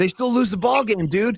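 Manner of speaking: drawled, drawn-out surfer-dude delivery. Repeating back what the other speaker just said, Spicoli impression. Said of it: "I like the way you said that".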